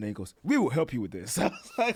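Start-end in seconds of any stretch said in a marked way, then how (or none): 0.4-1.4 mock enthusiastic, eager tone. Retelling the doctor's reply about insomnia, imitating an enthusiastic doctor. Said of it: "I love the enthusiasm".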